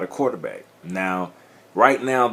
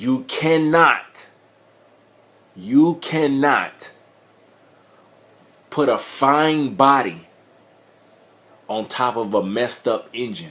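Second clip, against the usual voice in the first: passionate, frustrated, impassioned, higher; 3 semitones higher than usual. Complaining that the game is limited by its code: passionate, frustrated delivery. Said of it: "you might hear some passion in my voice".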